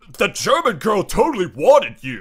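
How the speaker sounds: loud, big, swooping, sing-song bro voice. Talking with friends about Beer Fest, the speaker slips into a Chad voice. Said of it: "Is that your Chad voice?".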